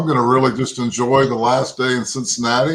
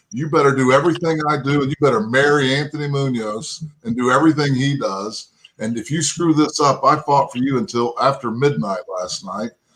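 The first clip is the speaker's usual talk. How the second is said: ordinary talk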